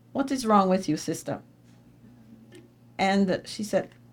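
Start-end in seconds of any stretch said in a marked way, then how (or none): 0.1-1.4 put-on strong, thick Jamaican accent, laid on quick. Retelling what a woman said to a stranded American, imitating a thick Jamaican accent. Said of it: "with a thick Jamaican accent".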